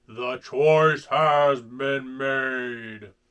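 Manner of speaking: eerie, deep, thundering ghostly booming voice. Reading a Ghostbusters story aloud, voicing a sudden unseen voice: booming spooky voice. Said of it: "a spooky voice boomed".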